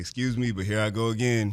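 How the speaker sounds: normal talking voice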